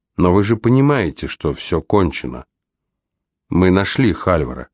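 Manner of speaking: ordinary delivery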